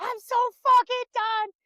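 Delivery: very high, exasperated, fed-up blurt. Retelling a past moment, acting out own angry outburst. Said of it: "I was pissed".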